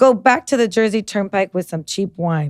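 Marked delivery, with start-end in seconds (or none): none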